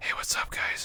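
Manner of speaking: soft, breathy, hushed whisper. A player whose character always whispers greets everyone; whisper. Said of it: "So you just hear me whispering".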